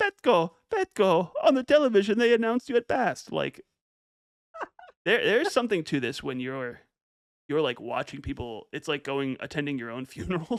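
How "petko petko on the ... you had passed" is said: put-on Bulgarian accent, much higher and louder. Quoting a wife in tears meeting her husband outside their house, use an attempted Bulgarian accent. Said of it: "I'll try to do a Bulgarian accent".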